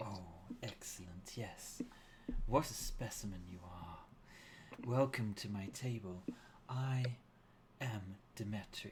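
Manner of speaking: soft authoritative voice. Voicing a woman greeting guests at a feast table: soft commanding tone. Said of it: "speaks with this soft tone".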